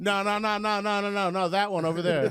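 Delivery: high, insistent, fussy, picky-sounding voice.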